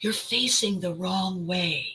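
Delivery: loudest possible stage whisper, pushed to carry. Retelling leaning in to a student: loud stage whisper. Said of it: "in the loudest stage whisper I'm capable of".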